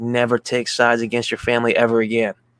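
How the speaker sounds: plain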